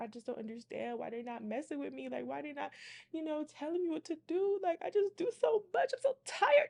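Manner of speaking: high, tearful, sobbing, worn-out voice. Retelling what the crying client said during a reading: imitating someone crying.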